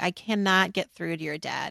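imitated voice in tears. Retelling what a scared, crying mother said: imitating mother in tears. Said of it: "She turns to me actually in tears".

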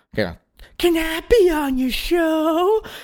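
very high, very slow voice, "show" stretched out. Retelling a phone call, imitating Barack Obama asking to join. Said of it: "Nice Barack Obama impression".

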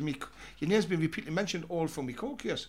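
ordinary talk

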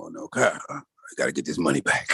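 put-on Italian-American accented speech. Retelling what Joe said after she lost money on a show, imitating Joe's Italian voice. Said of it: "he becomes more Italian to me".

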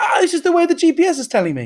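very high, loud, swooping, cross, defensive tone. Retelling a driver's reply after being questioned about tolls: imitating a defensive, cross driver. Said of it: "he got really defensive and really cross".

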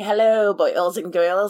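ghoulish horror-host voice. Describing how the horror host talks, in a Crypt Keeper voice. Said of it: "how he's talking".

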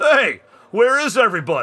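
put-on hearty, big, booming, gregarious old man voice. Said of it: "big gregarious voice".

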